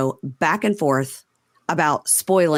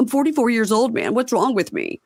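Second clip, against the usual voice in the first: sobbing, tearful, high crying voice, pitch swooping; 7 semitones higher than usual. Retelling how Jax cries about his age: imitating Jax crying. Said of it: "cries and goes".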